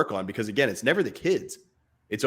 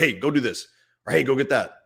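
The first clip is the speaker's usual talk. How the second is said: put-on curt, abrupt, blunt commanding tone. Describing fathers coming home from work and speaking to their kids, acting out abrupt orders. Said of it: "we're abrupt".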